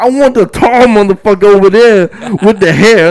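booming, bossy, high, very loud yell. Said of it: "Loud as shit".

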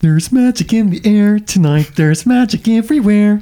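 squeaky, very high frog puppet voice. In a round of impressions, the speaker offers Kermit from another movie: Kermit the Frog voice. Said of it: "I'll be Kermit from another movie".

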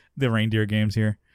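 ordinary talk, nothing marked

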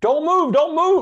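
top-of-lungs scream, very loud and high. Retelling how a cop in riot gear screamed at him, imitating a cop screaming. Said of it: "he is screaming at the top of his lungs".

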